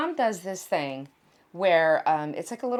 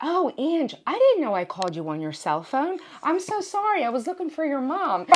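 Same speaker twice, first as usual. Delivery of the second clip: sweetly polite, nice voice, pitched higher; 8 semitones higher than usual. Retelling the sister-in-law calling the house: imitating Steph, really nice way. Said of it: "does it in a really nice way".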